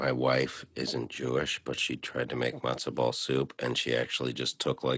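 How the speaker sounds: whispered delivery. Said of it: "I'm gonna whisper".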